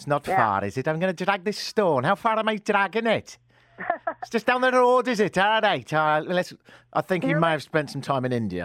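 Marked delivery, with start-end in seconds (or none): 0.0-5.9 shaky, pitched-up, not-great put-on Welsh accent. Imagining being that Welshman dragging the stone; Welsh accent. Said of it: "Imagine being that Welshman".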